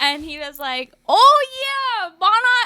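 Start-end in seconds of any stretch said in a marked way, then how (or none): 1.1-2.7 put-on loud, very high, slow botched Staten Island accent, drifting Canadian. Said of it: "that's not a Staten Island accent".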